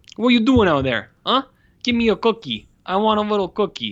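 put-on middle-aged man with Italian accent. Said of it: "he's suddenly like a 45 year old Italian man".

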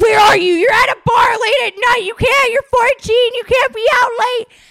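very high, very loud, shrill screaming. Telling a story, acting out her mom's reaction, imitating mom screaming. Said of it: "my mom was like screaming".

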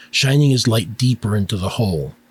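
plain reading voice

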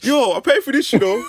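very high-pitched, very loud, shrill woman's voice. Acting out someone in the back of a seminar: imitating someone in the audience. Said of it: "Someone's in the back like".

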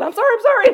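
put-on very high, flustered, panicked voice. Retelling own reply on that phone call: imitating own panicked apology. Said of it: "I panicked and said".

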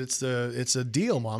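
plain

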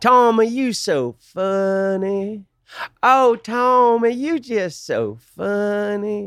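very high, very slow, syrupy, funny Southern drawl. Imitating a woman from Austin, Texas, in a syrupy Southern accent. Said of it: "she had the most syrupy Southern accent".

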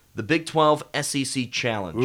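ordinary talk

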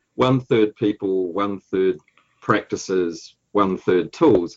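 slow, deliberate speech.

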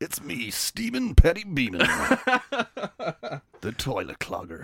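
big, swooping movie-trailer announcer delivery. Joking that a name sounds like a local radio DJ, movie guy voice. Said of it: "Movie guy is back".

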